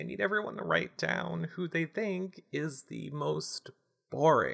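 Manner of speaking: soft, high, fake teary voice, close to crying. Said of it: "you sound like you were crying".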